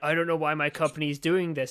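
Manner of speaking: put-on sad, depressed voice. Narrating a made-up scene, speaking as Hulk Hogan, playing him sad and depressed. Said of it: "He's like sad and depressed".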